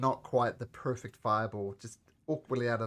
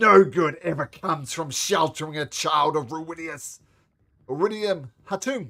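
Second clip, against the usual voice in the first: very loud, high-pitched, raw shouted scream; 5 semitones higher, 9 dB louder than usual. Voicing the father, struck by an axe, as he screams back: screaming. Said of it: "And he screams back".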